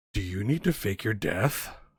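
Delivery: conspiratorial, hushed stage whisper. A game master voices a woman leaning close to your ear, half-whispering. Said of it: "to whisper in your ear".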